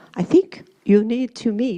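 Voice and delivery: put-on Scottish accent. Quoting a collaborator suggesting a meeting: imitating Doctor Robertson's Scottish accent. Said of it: "in his wonderful Scottish accent".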